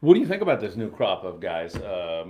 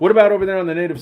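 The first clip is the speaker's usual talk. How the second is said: plain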